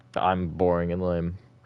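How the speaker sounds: plain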